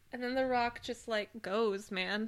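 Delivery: plain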